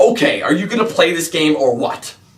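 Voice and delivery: dead-serious, stern, serious as can be. Retelling a message from a guy during a game, mock dead-serious tone. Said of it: "in the most serious tone ever".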